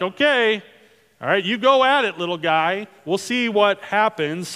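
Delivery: acted, wry, doubting, lightly sarcastic tone. Imagining how Saul answered David, sarcastic Saul voice. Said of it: "maybe a little sarcasm in Saul's voice there".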